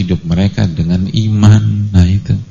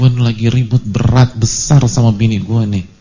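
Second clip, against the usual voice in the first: plain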